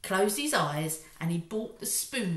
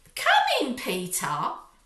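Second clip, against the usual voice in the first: put-on syrupy sweet tone, high and raised; 7 semitones higher, 7 dB louder than usual. Reading a story aloud, one character invites another in, sweetly. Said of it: "said Henry sweetly".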